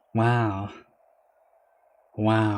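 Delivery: flat unenthusiastic tone. Reacting to catching a three-inch clam in a fishing game: unexcited flat tone. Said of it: "I don't sound excited at all".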